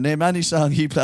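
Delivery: normal talking voice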